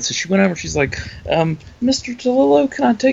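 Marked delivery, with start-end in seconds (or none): 1.8-3.1 put-on woman's voice, higher pitch. Retelling a woman asking an author for a photo: imitating Julia. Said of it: "It was the Julia impression".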